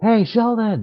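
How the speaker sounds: very high, loud yell calling across the distance. Voicing a character calling across to sheldon: yelling across to someone. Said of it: "yell over at Sheldon".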